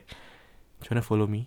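very slow, drawn-out, hushed whisper. Retelling how she quietly asked her friend to follow her: imitating a whisper. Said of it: "she whispered to her friend".

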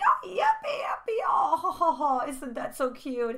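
condescending mock joyful voice. Retelling how a partner mocks your excitement: imitating condescending mimicry. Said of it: "and they mimic you".

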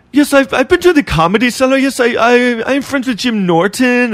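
put-on thick, heavy Chinese accent, pitched high. Retelling what a woman from china told them: imitating a thick chinese accent. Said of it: "she still had a very thick accent".

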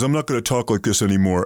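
ordinary delivery

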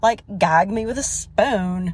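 put-on joking Valley girl slang voice. Trying the valley girl voice the speaker used to do: valley girl voice. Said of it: "I used to have a mean Valley girl".

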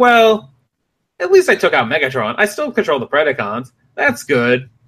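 confident, boastful, with big swooping pitch swings. Retelling a cartoon scene where Terrorsaur is beaten but boasting: imitating confident Terrorsaur. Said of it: "But he's confident".

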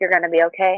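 ordinary talk

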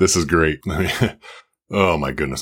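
talking through laughter. Reacting to a news clip, laughing while talking. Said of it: "I'm still laughing about this".

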